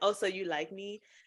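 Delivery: plain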